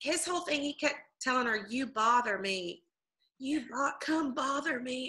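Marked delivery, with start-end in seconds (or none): 1.7-5.1 put-on corny, cheesy flirting delivery. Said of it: "And he's cheesy".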